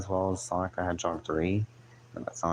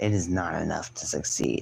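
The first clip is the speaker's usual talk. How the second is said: put-on deep, flat deadpan monotone drone; 2 semitones lower than usual. Doing an impression of a woman's lines as best possible: deep monotone voice. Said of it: "she has a deep monotone voice".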